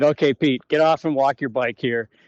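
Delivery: ordinary delivery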